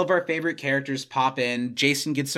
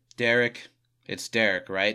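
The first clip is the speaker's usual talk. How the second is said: acted-out downcast, defeated, deflated voice; 4 semitones lower than usual. Retelling a scene, imitating Michael sounding dejected. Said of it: "so dejected".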